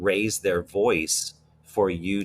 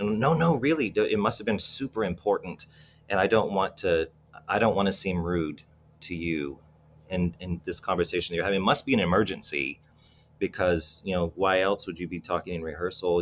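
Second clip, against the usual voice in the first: plain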